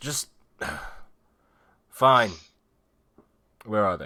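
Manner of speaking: loud, fed-up, impatient, exasperated voice. Narrator voicing an unseen voice heard in the caves, exasperated voice. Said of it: "you hear like an exasperated voice".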